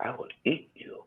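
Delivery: whispered, super soft, breathy voice. Retelling a man who would threaten them all the time, in a super soft voice. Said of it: "he had a real super soft voice".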